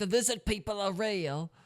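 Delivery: horrible, bad mock Cockney accent.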